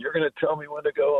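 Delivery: play-acted, shrill, very high-pitched shouted yell. Recalling a loud World Series moment at third base, retelling a yell. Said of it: "he's yelling at me".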